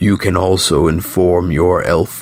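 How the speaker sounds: ordinary delivery, nothing marked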